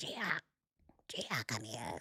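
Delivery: very quiet, soft, slow, parched witch voice. Retelling calling the cats at the end of live streams: imitating own witch-like voice. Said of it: "'Cause I sound like a witch".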